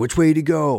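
mock yell, high-pitched. Retelling a foot chase, quoting a partner: imitating partner yelling. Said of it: "gives me the, the yell".

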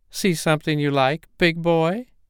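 teasing, high, put-on falsetto voice. Narrating a story, a man strikes a pose and addresses his teammate in a falsetto voice. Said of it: "he spoke in a falsetto voice".

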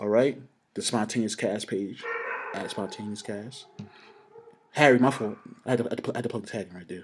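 low, soft, odd put-on announcer voice. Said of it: "Why am I talking like this?".

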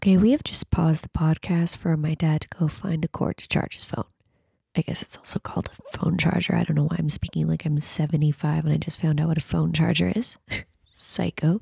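hushed whisper. Talking to listeners while the podcast is paused: whispering. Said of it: "I wanted to come on and whisper".

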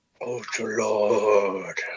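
fake deep bass voice. Answering a request for a best version of the voice: Ultra Lord Trump Nixon voice. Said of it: "give us your best Ultra Lord Trump Nixon".

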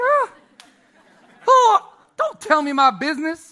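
irritated, fed-up, high, drawn-out mad voice. Retelling a reply to her telling him to turn off Netflix: acting out own mad, higher voice. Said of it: "My voice goes higher when I'm mad".

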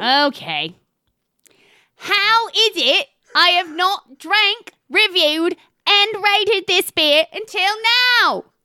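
put-on high reality-TV contestant British accent. Beer reviewer, asked to keep the accent, begins the review: reality-star british accent. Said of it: "that was like specifically reality star British".

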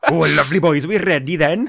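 sudden put-on Welsh accent. Before entering the escape room, the speaker asks the boys if they're ready in a Welsh accent. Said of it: "Not sure where your Welsh accent just came from".

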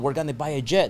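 ordinary talk

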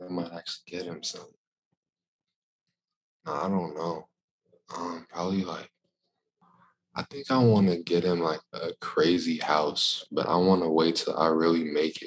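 hushed, quiet whispering. With him in the room, talking about buying him a gift, whispering. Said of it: "I gotta whisper".

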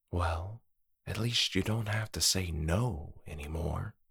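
hushed whisper. A father remembers the small voice in his mind, whispering.

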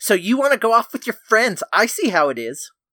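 angry, reproachful tone. Asked to act out the mad version of a couple's talk: acting mad. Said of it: "so let's do the mad one".

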